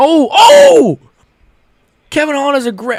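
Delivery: yelling in excitement. Watching a fight live and reacting to a big punch: screaming in excitement. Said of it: "I'm sorry for screaming".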